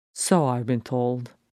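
plain

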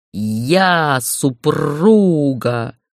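growling dragon voice. Reading fiction aloud, a narrator voices a dragon's line: growling dragon. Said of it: "прорычал дракон".

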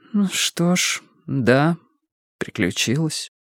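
calmer, composed, settled mutter. Reading fiction: a woman answers him, muttering more calmly. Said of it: "пробормотала она уже спокойнее".

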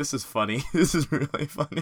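talking through laughter. Reacting to a surprising plot twist with another speaker: laughing while talking. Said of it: "I'm just laughing".

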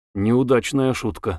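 ordinary delivery

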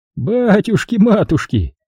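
laughing exclamation. A man asked about his whereabouts exclaims, laughing. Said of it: "рассмеялся он".

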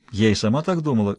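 ordinary delivery, nothing marked

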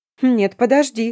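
exclamation. The narrator grabs the vampire woman's hand to stop her leaving, exclaiming. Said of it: "воскликнула".

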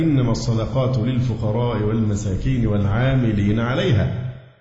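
usual speaking voice

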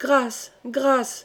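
meek, timid voice. A few voices in the hall call out, timid voices. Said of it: "firent quelques voix timides".

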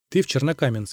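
usual speaking voice

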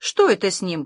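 frightened, fearful. Mom, emerging from the records, asks the narrator about Dad, frightened. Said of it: "испуганно спросила мама".

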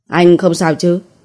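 plain

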